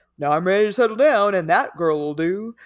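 caveman-style cartoon voice. Voicing a common framing of settling down, talking like Fred Flintstone. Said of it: "I don't know why I just started talking like Fred Flintstone".

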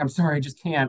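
put-on, near panic-attack, apologetic, pleading tone. Retelling a phone call where she canceled: imitating someone panicking. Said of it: "almost having, like, a panic attack on the phone".

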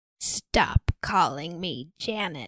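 put-on deep male voice. Quoting a woman answering a man who calls her Janet, in a deep man's voice. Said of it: "But in like a deep man's voice".

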